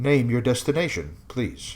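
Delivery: artificial computer voice heard through a speaker. Describing a room as a speaker voice asks a destination: Isaac's voice. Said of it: "the same voice of Isaac's, of that Dragonkin A I".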